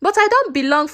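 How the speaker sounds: ordinary delivery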